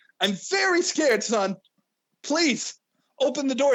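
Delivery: put-on pleading tone. Retelling a scene where a father begs his scared son: imitating Eddie begging. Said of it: "And he's just begging".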